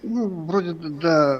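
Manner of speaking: stuttering, stammering speech. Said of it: "только не заикайся".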